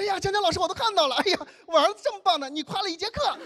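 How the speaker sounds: mock overjoyed, gushing, high-pitched delight. A teacher acts out a parent waiting at the classroom door after class, mock-delighted. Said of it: "有的家长开心到什么程度".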